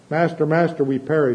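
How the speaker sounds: ordinary delivery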